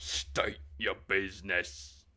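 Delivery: demanding hobgoblin door guard bouncer voice. Narrating for the players, voicing the hobgoblin bouncer at the door. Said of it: "He's like".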